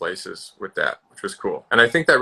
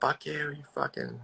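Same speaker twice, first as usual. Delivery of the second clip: high-pitched shouted outburst; 7 semitones higher, 10 dB quieter than usual. Retelling being shut in a coffin while filming: imitating own yelling.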